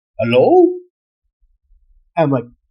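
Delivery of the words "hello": put-on loud, French-accented voice calling out. Retelling a voice that answered in the fort room: french accent. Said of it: "some guy with a French accent goes".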